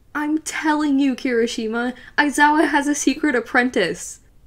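effusive, gushing delivery. Ashido slams her hands on kirishima's desk and tells him, gushing. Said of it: "Ashido gushed".

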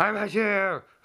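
high, screaming, bragging tone. Acting a character who keeps screaming a boast: screaming. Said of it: "you've been screaming high tier all day".

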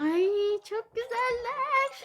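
thrilled, delighted, high, excited gush. A streamer getting lots of pets in a game: excited. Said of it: "Çok heyecanlıyım".

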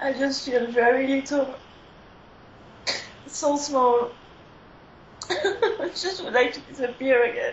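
slow, tearful weeping through the words. Guided through an intense memory, the speaker answers while crying. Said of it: "Sorry, I'm just crying".

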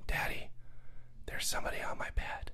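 soft, quick, quivering whisper.

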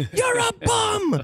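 very high, far-carrying jeering yell.

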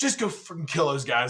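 acted-out angry, fed-up, pissed-off voice. Retelling an officer's reply during a firefight: imitating a pissed-off order. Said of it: "He was so pissed".

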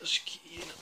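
whispered, pained groaning "ai ai".

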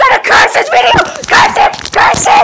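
fast, frantic, panicked screaming rant. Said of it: "Dixie screaming".

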